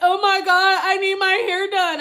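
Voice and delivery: tearful, sobbing, high crying wail. Retelling how she was literally in there crying, imitating someone crying. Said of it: "she literally was in there crying".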